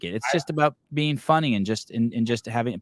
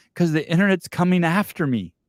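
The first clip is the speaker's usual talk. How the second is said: put-on sheer terror, high, terrified voice; 7 semitones higher, 4 dB louder than usual. Retelling a late-night call from a staff member, imitating someone in terror. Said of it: "in sheer terror".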